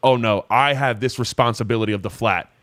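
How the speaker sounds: plain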